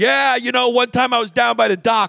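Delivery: put-on heavy Philly accent. Retelling what a guy told the group, in a thick philly accent. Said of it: "with like a thick Philly accent".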